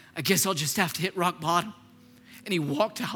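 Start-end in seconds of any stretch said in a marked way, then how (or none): none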